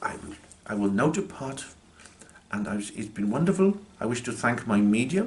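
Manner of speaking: put-on polite, educated, well-spoken Indian accent. Retelling a spirit's farewell spoken through a medium: imitating a deep, educated Indian voice. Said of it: "in this really deep, educated Indian voice".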